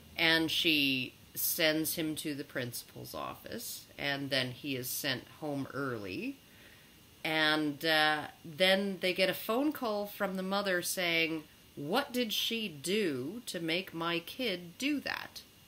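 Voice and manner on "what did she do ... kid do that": huffy, indignant, outraged tone. Retelling a parent's call to the school: imitating an indignant mother. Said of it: "indignant mother".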